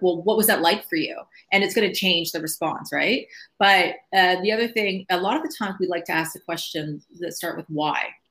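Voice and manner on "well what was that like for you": angry-sounding voice. Workshop teacher showing how tone changes a question, in a really angry tone. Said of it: "really angry, like, tone".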